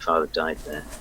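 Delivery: low muttering to herself. Game narrator voices Granny reading a sign, muttered low voice. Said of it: "begins to speak in a muttered, low voice".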